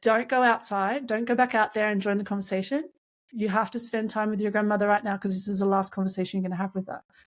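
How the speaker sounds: ordinary delivery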